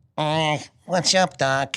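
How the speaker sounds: very slow, drawn-out cartoon rabbit voice. Retelling how the doctor asked for Bugs: Bugs Bunny voice. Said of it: "I wanna talk to Bugs".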